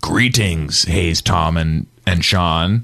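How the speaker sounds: very deep, low, spooky monster voice. Retelling a strange voice heard in the headphones, in a scary monster voice. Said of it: "kind of like like a scary monster voice saying".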